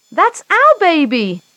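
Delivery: high-pitched shouting, crying out together. Reading a story as parents hear their lost baby called to the office, shouting. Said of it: "the Browns shouted".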